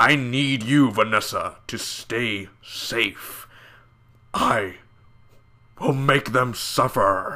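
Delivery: slow, deliberate character voice. Reviewing a show, imitating a villain's voice: Kingpin voice. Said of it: "and that Kingpin voice".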